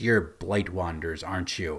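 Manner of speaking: sneering tone. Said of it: "just looks at them and sneers".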